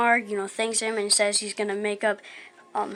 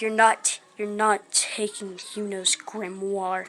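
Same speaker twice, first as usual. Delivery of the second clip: voice with a slight demonic edge. Recapping a fight scene as he takes the sword against a chain mage; slightly demonic Asta voice. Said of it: "like a slightly demonic voice".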